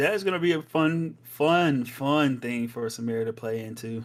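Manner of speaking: heavy, dripping, extremely sarcastic delivery. Commenting on a support Swain pick for Samira to face: extremely sarcastic. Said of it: "I'm being extremely sarcastic".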